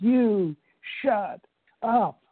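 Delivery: big booming yell, very high, acted out. Imitating a man who taught the shut-up close, retelling a scream. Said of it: "And he'd scream".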